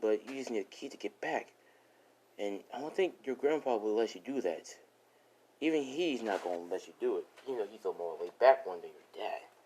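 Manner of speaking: ordinary delivery, nothing marked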